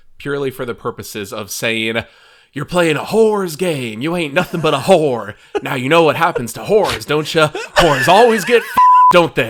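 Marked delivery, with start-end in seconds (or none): 2.5-9.5 put-on weird Southern accent, loud, high-pitched, belted. Quoting Billy Ray Lansing's lines, Billy Ray Lansing's weird Southern accent. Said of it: "he says it with this like weird southern accent".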